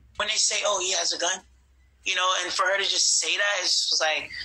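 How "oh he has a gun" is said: normal talking voice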